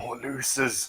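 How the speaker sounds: whispering. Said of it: "can I try to whisper to Remy?".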